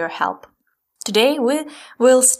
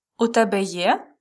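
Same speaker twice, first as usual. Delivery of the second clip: pitch climbs on final є. Ukrainian lesson, asking 'do you have' as a question: rising intonation on є. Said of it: "If we pronounce it with a question intonation, rising intonation, means do you have?".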